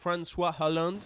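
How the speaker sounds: name pronounced with an American accent. Asking people about a name, now pronounced the American way: American accent on the name. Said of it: "on va le prononcer à l'américaine".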